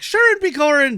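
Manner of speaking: very high, very loud, shrill, exaggerated Irish accent. Describing an actor's full-on Irish accent: over-the-top Irish accent. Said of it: "he's doing a full on, like".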